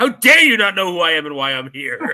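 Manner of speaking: put-on, loud, furious angry outburst. Retelling an actor's reply to a reporter: imitating Martin Landau angry. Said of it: "he got so angry".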